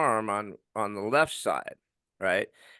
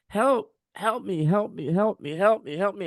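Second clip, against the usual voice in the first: acted high, frantic, desperate repeated screams; 8 semitones higher than usual. Retelling running down a hospital hall calling for help: retelling a scream for help. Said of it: "I'm just screaming, like".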